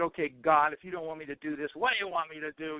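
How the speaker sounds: put-on angry outburst voice. Retelling own words to god after going outside: imitating own angry outburst. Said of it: "I was really angry, venting".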